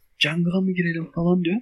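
mimicked hushed speech. Speaker retells what a friend said during a game, imitating Furkan's hushed voice. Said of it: "Furkan kısık sesle konuşuyor sana".

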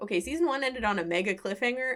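ordinary talk, nothing marked

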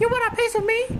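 very high-pitched, squeaky puppet voice. Talking with friends about voice acting, speaker does an Elmo voice. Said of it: "Elmo also one episode".

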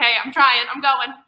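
loud high-pitched shouting. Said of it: "I'm like".

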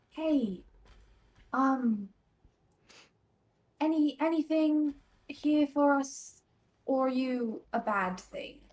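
whispered in character. Leaning down to speak to a breathing patch of dirt: whispering in character. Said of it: "kinda lean down and kinda whisper".

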